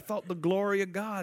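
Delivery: put-on Jamaican accent. Retelling what a non-believing woman said to her, imitating her Jamaican accent. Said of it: "She had a Jamaican accent".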